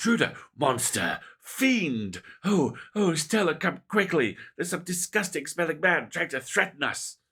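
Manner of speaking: very loud, high, barking, alarmed voice. Reading a story aloud as Gretchen's growls turn into barks, Gretchen barking. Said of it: "Gretchen's growls escalate into barks".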